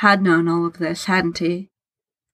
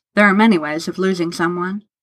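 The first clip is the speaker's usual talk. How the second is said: plain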